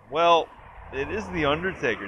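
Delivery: put-on offhand, bone-dry, matter-of-fact, nonchalant delivery. Retelling a trailer line, imitating Big E's dry nonchalant delivery. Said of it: "very sort of nonchalantly goes".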